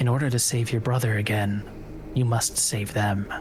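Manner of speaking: disembodied, creeping voice. A spirit addresses a player from the darkness, voice creeping from the dark. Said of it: "And [name], pulling away from the hug, says, it's been a while. / A voice creeps out of the darkness and comes to greet you".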